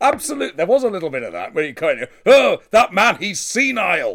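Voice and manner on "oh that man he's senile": very slow, high, drawn-out, at top voice. Retelling what a granddad would say about a man: imitating a loud announcement. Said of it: "announce very loudly at the top of his voice".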